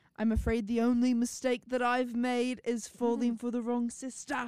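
put-on British accent. Retelling what he said to Spencer in a British accent. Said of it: "love that British accent".

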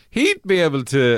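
voice breaking and cracking. Joking about a vet's work with cows: voice breaking. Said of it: "Sorry, my voice broke there".

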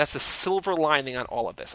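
ordinary talk, nothing marked

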